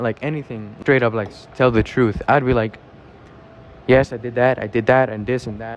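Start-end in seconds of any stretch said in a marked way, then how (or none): none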